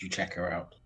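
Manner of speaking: soft, hushed, half-whispered stage whisper. Half-whispering in character to a fellow party member during an escape: half-whispering in character. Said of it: "I'll just whisper to him".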